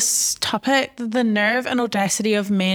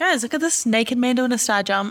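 normal talking voice

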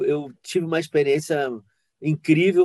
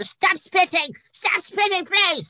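put-on very high, hysterical, fussy old-lady tantrum. Retelling how a performer threw a fit at being spat on, in a hysterical fussy old lady voice. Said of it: "aquela voz de velha xiliqueta".

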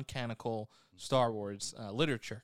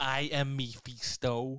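put-on fake French accent; 3 semitones higher than usual. Imitating an actor as a villain: fake French Malkovich accent. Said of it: "fake French Malkovich accent".

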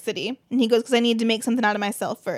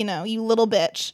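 ordinary delivery

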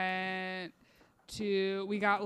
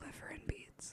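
very soft, breathy whisper, very close; 9 semitones higher, 14 dB quieter than usual. Imagining a dream visitor whispering in the speaker's ear, Shmarglag Gulag whisper. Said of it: "he's going to just whisper in my ear and say".

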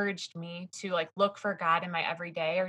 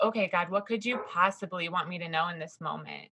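put-on sarcastic tone. Retelling a past prayer amid family chaos, imitating own past sarcastic tone. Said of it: "I really feel like I was sarcastic".

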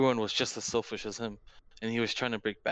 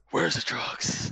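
put-on superhero growl, pitched higher; 4 semitones higher than usual. Retelling a scene where the hero interrogates a guy: Batman voice. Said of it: "I just love quoting his lines".

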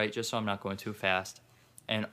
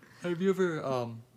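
words pulled through a yawn, pitched up; 7 semitones higher than usual. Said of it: "I'm yawning".

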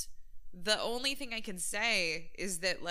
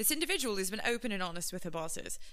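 put-on British accent. Reading out what the Navy says about the individual: put-on British accent. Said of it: "I need my British accent".

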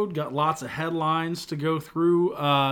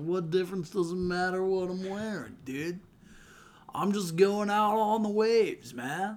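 laid-back, high, slow, stoned surfer dude drawl; 3 semitones higher, 4 dB quieter than usual. A podcaster mocks the other speaker's remark, high surfer impression. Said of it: "You sounded like a high surfer right there".

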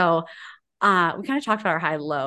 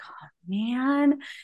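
acted deflated, crestfallen, sad groan, pitched up; 5 semitones higher, 3 dB quieter than usual. Retelling his reaction on hearing the pet mantis was lost: imitating a sad reaction. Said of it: "so sad".

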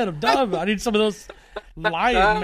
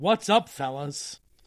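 ordinary talk, nothing marked

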